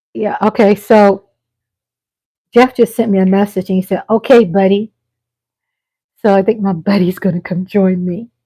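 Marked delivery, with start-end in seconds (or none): none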